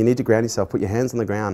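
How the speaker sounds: ordinary talk, nothing marked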